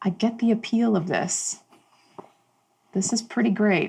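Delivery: low, private voice, hard for others to hear. A character touches another and speaks so no one else can hear, low voice. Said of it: "in this low voice, no one else can hear".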